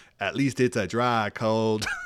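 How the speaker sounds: broad, slow Oklahoma drawl, laid on thick. Retelling a companion's remark in the cold rain: imitating Chris's thick Oklahoma accent. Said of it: "in his thick Oklahoma accent".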